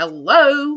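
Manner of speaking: acted angry, very loud yell. Retelling calling out again, getting mad: imitating own angry call. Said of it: "I'm starting to get really mad".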